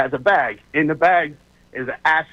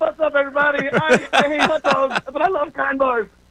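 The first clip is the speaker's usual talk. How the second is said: put-on screaming announcer voice, higher; 13 semitones higher than usual. Mimicking a radio host's commercial read: imitating Bill screaming an ad. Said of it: "why is Bill screaming at everybody when he does his commercials".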